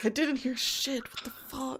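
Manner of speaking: muttered grumbling. Playing a character settling back into a tent, mumbling a grumbling complaint. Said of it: "mumbling, complaining as he gets back".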